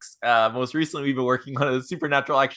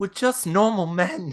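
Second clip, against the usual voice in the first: earnest, sincere, high little bear puppet voice; 6 semitones higher than usual. Retelling a clip where a little bear puppet speaks: imitating a puppet's sincere delivery. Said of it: "the way he says it is so sincere".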